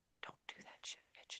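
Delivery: put-on whisper. Acting out the inner voice of conscience: acting out a whisper. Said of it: "That little voice whispers".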